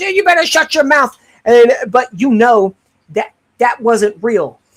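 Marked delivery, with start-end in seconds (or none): 0.0-1.2 sharp, pitched-up snapping voice. Acting out an old married couple, the husband retorting: imitating an old husband snapping back. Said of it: "turns around and goes".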